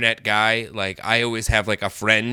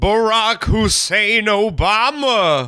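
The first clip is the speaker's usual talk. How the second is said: put-on announcer voice, pitched higher; 11 semitones higher, 4 dB louder than usual. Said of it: "I need you to do a Don Pardo voice".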